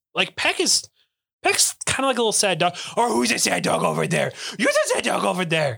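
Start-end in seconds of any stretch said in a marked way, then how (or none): 3.0-5.8 put-on swooping, creaky baby talk. Showing how a sad dog gets spoken to: talking to him like a dog. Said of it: "unless I talk to him like a dog".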